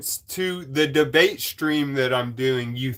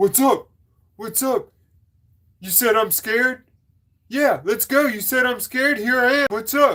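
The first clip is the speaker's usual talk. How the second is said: play-acted riled-up, mad, taunting, high-pitched; 8 semitones higher than usual. A host recounts a caller who was mad about a joke, mocking a mad caller. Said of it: "He was mad that I said".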